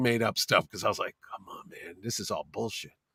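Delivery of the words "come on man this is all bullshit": very soft whisper. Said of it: "I whisper in his ear".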